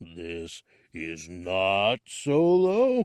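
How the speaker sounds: deep, very slow, threatening growl, one word stretched. Narrator reading Jabba answering Boba Fett; Jabba's dangerous near growl. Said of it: "He examined [name], / the Hutt murmured in a bass rumble. / "We are impressed with your efforts".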